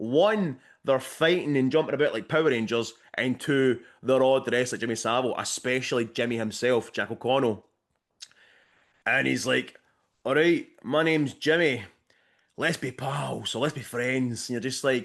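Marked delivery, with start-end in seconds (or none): 10.2-14.5 put-on poor Scottish accent. Retelling a film scene, quoting a character's introduction: Jack O'Connell's bad Scottish accent. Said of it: "bad convincing Scottish accent from Jack O'Connell".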